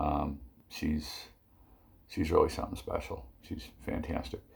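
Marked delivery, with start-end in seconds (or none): 3.4-4.4 soft, whispered, unenthusiastic, unexcited tone. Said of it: "don't sound too excited about it".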